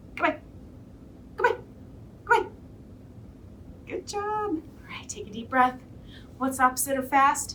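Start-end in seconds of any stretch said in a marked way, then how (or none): 0.2-2.5 very fast, rapid-fire delivery, much higher pitch. Leading listeners in a speed game, saying goodbye as fast as possible. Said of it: "Let's say goodbye as fast as we can".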